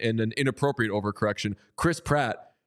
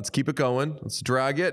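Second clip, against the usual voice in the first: plain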